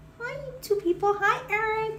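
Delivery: cute small-dog voice. Speaking for the dog as it greets youtube viewers; little doggy voice. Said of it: "in her little her little doggy voice".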